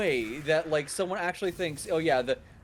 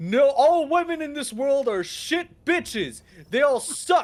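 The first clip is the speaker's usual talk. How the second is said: loud, high-pitched, ranting screaming tirade; 9 semitones higher, 7 dB louder than usual. Retelling a man on a livestream yelling at strangers: imitating a man screaming at people. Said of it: "screaming at people".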